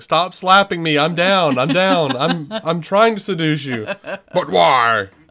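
fake weepy sobbing, high and drawn out. Imagining the daughters talking to Sean Connery's Bond: mock crying. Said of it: "crying and going".

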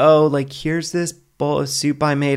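hesitant, doubtful, unsure and worried. Showing a nervous way to serve a partner soup: unsure, worried offer. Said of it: "setting them up to taste it and, and think that it's gonna taste bad".

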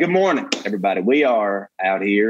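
put-on Texas drawl. Answering a request to do an impression: Matthew McConaughey impression. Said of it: "He's like".

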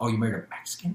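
secretive, hushed stage whisper. Quoting what a guy said back to the speaker's wife: retelling a whisper. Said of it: "the guy whispered".

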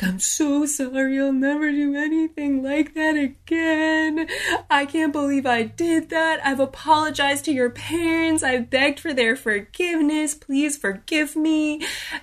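tearful high pleading voice. Retelling a man's apology at the speaker's bedside, imitating him crying. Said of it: "He's crying".

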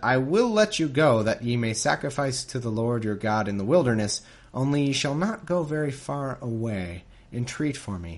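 ordinary delivery

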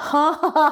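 high, sarcastic mock ha-ha laugh. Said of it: "I must have a sarcastic laugh".

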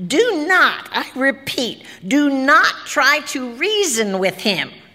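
slow, high, squawking, bird-like voice. A ballerina on television reads the announcement aloud in a grackle squawk. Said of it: "said the ballerina, ... she said in a grackle squawk".

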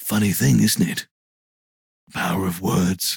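whispering seductively and menacingly. Whispering nose to nose with a scene partner, a seductive, menacing whisper. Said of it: "whisper both seductively and menacingly".

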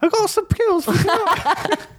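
very high, offhand, casual put-on British accent. Quoting a line for another speaker, attempting a British accent. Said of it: "I can't do a British accent".

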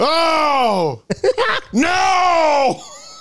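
very high, shrill, drawn-out wailing scream. Asked to give your Mike Sharpe getting hit, do a Mike Sharpe screaming impression. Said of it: "can you give me your Mike Sharp".

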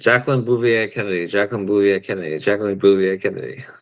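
words rattled off rapidly, repeated three times. Taking up a challenge to say the name three times fast, said three times fast. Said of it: "say Jacqueline Bouvier Kennedy three times fast".

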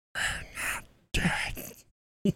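eerie, creepy, breathy, very quiet whisper. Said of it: "it's a really creepy whisper right there".

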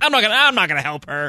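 high and really upset. Retelling a scene from Always Sunny, imitating upset Dennis. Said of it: "so upset. He's like".

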